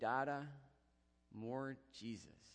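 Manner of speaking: play-acted drowsy, half-awake little voice. Retelling what his child said as he got up to leave, imitating a little sleepy voice. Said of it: "speaks to me in this little sleepy voice".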